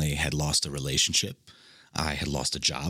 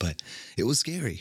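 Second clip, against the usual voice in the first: slightly emotional, higher-pitched voice; 5 semitones higher than usual. Speaker recalls a scary time of feeling lost in life, a little emotional. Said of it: "Sorry, I got a little emotional".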